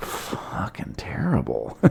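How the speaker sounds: very quiet, whispered mutter under the breath. Retelling how a man reacted while the speaker was bombing, imitating an under-breath mutter. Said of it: "He just under his breath was like".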